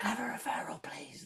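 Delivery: high, unvoiced whisper, very close and intimate.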